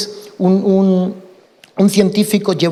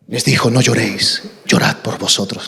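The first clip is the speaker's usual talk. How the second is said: deep, very low preacher's pulpit delivery; 9 semitones lower than usual. Imitating a pastor's well-known catchphrase line: imitating pastor Fernando. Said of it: "Tiene una cuña el pastor Fernando".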